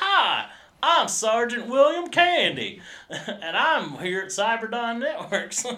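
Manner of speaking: put-on high, loud, slow southern accent, pitched way up. Retelling a scene with a soldier running on a treadmill: William Candy's southern accent. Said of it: "he has a southern accent".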